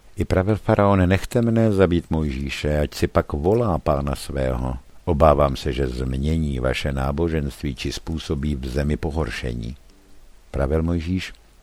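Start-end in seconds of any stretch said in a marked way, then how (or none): none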